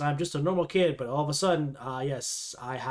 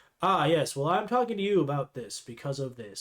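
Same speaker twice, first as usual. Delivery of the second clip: play-acted awkward, stilted, wooden voice-acting delivery. Mocking a show's supporting voice actors: imitating stiff monotone voice acting. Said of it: "Everyone sounds kinda stiff and monotone".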